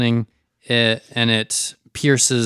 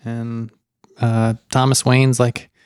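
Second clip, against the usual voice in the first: usual speaking voice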